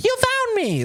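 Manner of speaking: very high, otherworldly spirit nymph voice. Imagining a spirit nymph popping out after a ritual: acting as a spirit nymph. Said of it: "a fucking spirit nymph would, like, pop out and be like".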